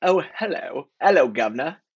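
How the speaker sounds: put-on British accent. Asked by another speaker for a greeting, trying it again: British accent. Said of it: "Maybe British accent?".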